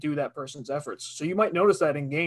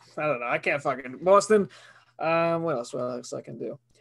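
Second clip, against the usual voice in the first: ordinary talk, nothing marked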